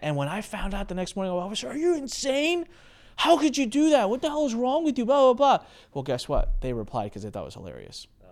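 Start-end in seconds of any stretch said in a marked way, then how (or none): 1.6-5.7 very high-pitched, shrill, berating yell. Retelling confronting someone over an email they sent: imitating own past yelling. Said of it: "'Cause I started yelling at him".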